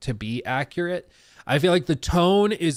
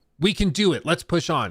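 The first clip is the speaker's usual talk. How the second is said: sure of itself, confident, self-assured; 2 semitones higher than usual. Demonstrating different readings of one line, said confidently.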